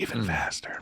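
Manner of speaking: teasing, playful, hushed put-on whisper. Repeating that the build gets even faster: put-on quiet voice. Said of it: "Why'd you get quiet when you said faster?".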